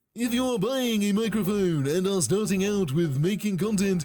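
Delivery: dumb, condescending cartoon voice. Giving a person's microphone advice a voice: condescending cartoon dumb voice. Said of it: "I'm going to go with the voice of something condescending. ... That's my uh, nineteen seventies Warner Brothers slash Disney cartoon dumb voice".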